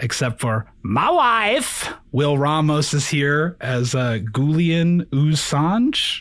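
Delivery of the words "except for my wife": jokey high swooping character voice, drawn-out "wife". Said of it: "impossible for me to say the words "my wife" not in a Borat voice".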